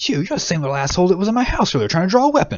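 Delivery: enraged, high and loud. The mayor confronts the man caught trying to burn his house: Kier storming out, angry. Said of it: "You see [name] come storming out. / You gather he doesn't intend on letting him live. / The mayor".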